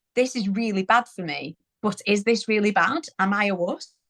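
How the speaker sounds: normal talking voice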